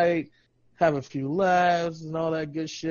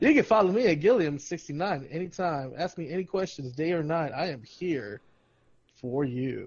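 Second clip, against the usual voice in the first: confident, self-assured, sure-of-itself delivery. Repeating a social media handle after being told: more confident. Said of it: "does that sound better?".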